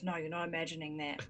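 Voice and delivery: quiet, soft, hushed half-whisper. Amelie answers Oscar's questioning look, half-whispering. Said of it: "Amelie shakes her head and whispers".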